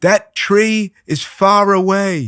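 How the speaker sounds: high-pitched, slow, loud yelling. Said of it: "But now I'm yelling at him".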